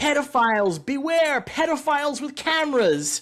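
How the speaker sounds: mock slow, very high, loud drawn-out yell. Retelling yelling at masked camera crew outside a market: retelling own yelling. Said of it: "yelling pedophiles at the First Amendment auditors".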